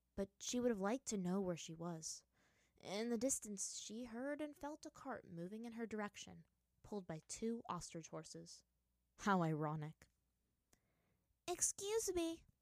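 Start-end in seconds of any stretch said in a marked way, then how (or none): 11.5-12.4 sweet, pitched-up calling tone. Toph calls up to the merchants on the wagon; calling sweetly. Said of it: "Toph called sweetly".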